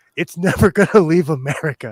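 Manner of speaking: words breaking into laughs throughout. Speaker admits being cynical, laughing while talking. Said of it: "I can't say that without laughing".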